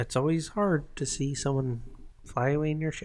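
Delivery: very quiet, hushed, almost under the breath. Doing an impression after the other speaker asks for one: George Lucas impression. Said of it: "can you do your George impression?".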